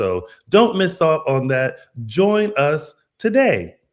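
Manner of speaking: hard-sell, salesy TV infomercial voice. Promoting a paid members-only page: infomercial-style sales pitch. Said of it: "I sound like an infomercial".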